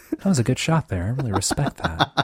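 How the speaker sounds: delivery with energy brought way down. Retelling talking to players on a game headset: Jack Handey type voice. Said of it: "Jack Handey type voice".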